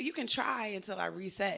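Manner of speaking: ordinary talk, nothing marked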